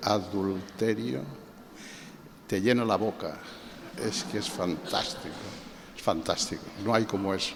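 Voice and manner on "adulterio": adulterio said softly and gently, savoured. Showing how to pronounce a wonderful word: soft, gentle 'adulterio'. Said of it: "si uno lo pronuncia suavemente".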